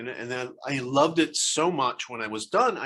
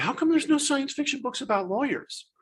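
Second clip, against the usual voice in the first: very high, pitched-up, mock woeful, very sad lament; 12 semitones higher than usual. Recalling a remark by mom's lawyer that sparked a book, imitating a sad voice. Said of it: "very sad, sad voice".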